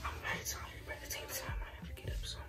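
very soft, hushed whisper.

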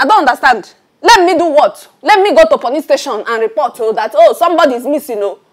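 shouting. In a scene, a character speaks until another says they are shouting: shouting. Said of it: "you are shouting".

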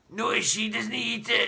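high, rough, croaking granny voice. Narrator reading the grandmother's reply, croaking. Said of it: "she croaked".

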